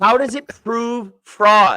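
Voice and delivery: very loud, very high, shrill, furious yell. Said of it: "I'm not yelling at you".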